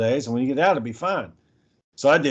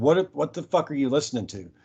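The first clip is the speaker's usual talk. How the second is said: mock-incredulous, acted disbelief; 3 dB quieter than usual. Retelling a woman's reaction to a masked man's TV repair video, imitating incredulous disbelief. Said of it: "she was like fucking incredulous".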